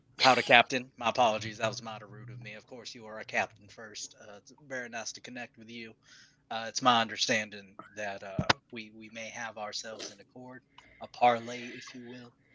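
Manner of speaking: deep voice, sunk a full octave. Playing a character greeting the Captain: voice an octave deeper. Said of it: "his voice drops down an octave deeper".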